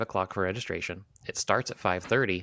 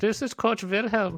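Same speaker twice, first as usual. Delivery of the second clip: fake German accent, very high-pitched; 13 semitones higher than usual. Joking about how a coach talks to kids: put-on German accent. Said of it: "do you put on a German accent".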